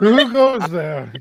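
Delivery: put-on loud, boozy, drunken calling voice. A game player, as Hugo drawing his rapier toward a voice under the stairs: drunken Hugo voice. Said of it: "Hugo like drunkenly takes out his rapier".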